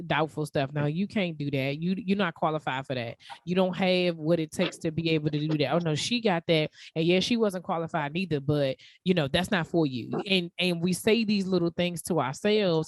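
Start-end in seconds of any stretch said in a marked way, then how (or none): none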